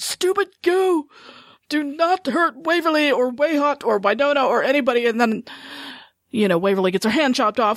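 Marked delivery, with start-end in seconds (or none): 0.0-5.0 play-acted yelling, high, drawn-out screaming. Retelling how they screamed at the TV: imitating own screaming at TV. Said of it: "you should have heard me screaming at my T V".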